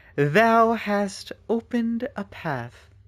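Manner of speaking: high, very slow, archaic thee-and-thou speech. Mocking how mysterious voices in these games always talk: imitating Atlus game characters' archaic speech. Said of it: "they always talk like this".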